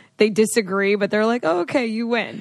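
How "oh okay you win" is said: sarcastic, grudging, fake resigned tone. Describing how people end a fight, retelling a sarcastic concession. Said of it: "it's like so sarcastic".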